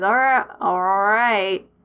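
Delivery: slow, every word drawn way out. Recapping a character's reply, saying it real drawn out. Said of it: "real drawn out like that".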